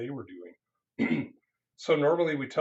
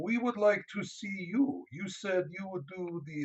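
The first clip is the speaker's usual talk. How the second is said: put-on, bad Ukrainian accent, pitched up; 7 semitones higher than usual. Quoting training participants near the end of a training, in a bad Ukrainian accent. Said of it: "this is my bad Ukrainian accent".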